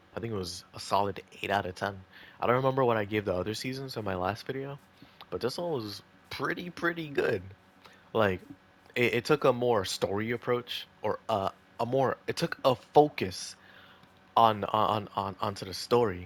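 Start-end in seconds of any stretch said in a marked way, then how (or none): 9.2-16.3 slow, stuttering, stammering, repeating words, losing the thread. Giving an opinion on a season in a video, stuttering. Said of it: "I'm stuttering so bad".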